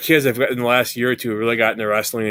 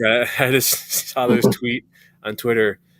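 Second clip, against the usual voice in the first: words broken up by laughs throughout; 2 semitones higher than usual. Starting to tell the other speaker about a tweet, laughing while talking. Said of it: "Sorry, I'm laughing".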